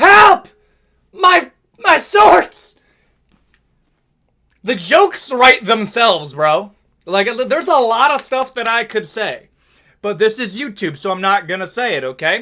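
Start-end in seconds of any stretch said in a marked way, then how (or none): 0.0-2.8 loud high-pitched yelling. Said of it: "yelling at the referee".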